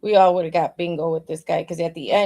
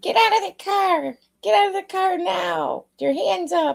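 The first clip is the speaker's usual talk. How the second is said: slow, very high helium squeak; 12 semitones higher than usual. Imagining how a man who failed would shout at criminals, in a helium-balloon voice. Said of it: "talked like he was always sucking on a balloon".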